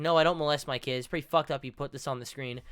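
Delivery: ordinary delivery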